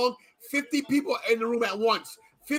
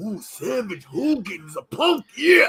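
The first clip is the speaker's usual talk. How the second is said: very slow, drawn-out wrestler-style drawl; 4 dB louder than usual. Doing a wrestling impression during talk of wrestlers: Macho Man impression. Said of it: "my Macho Man impression".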